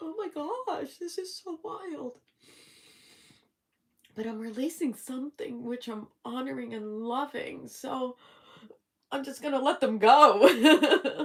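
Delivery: very loud, tearful speech, crying while talking. Moved by viewers' kind comments, a host talks to them while crying while talking. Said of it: "I have no idea why I'm crying".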